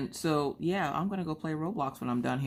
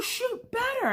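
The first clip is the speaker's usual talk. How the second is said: mock frustrated, shrill, exasperated, very high yelling. Speaker recalls yelling at young kids while playing a game, retelling own yelling. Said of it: "I'm yelling at them to shoot better".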